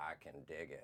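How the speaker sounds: put-on narrator-style movie voice. Performing a line from a movie pitch on request: Morgan Freeman voice. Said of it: "do it in the Morgan Freeman voice".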